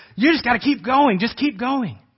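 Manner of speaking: angry shouting. Retelling shouting at your daughter after she sat down, imitating an angry shout. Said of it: "I got angry and I started shouting".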